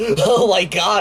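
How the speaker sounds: put-on laughing while talking. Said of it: "I'm laughing so much that tears are coming out".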